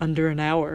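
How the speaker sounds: hushed, leaning-in half-whisper. Retelling a scene where a surgeon leans in: half-whispering, imitating a character. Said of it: "leans in and whispers, he's like".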